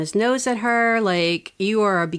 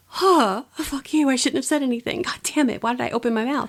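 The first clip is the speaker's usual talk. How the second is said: higher-pitched put-on quiet crying, tearful; 5 semitones higher than usual. Retelling a scene where a character turns away: imitating a character crying quietly. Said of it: "And she just turns and she's crying".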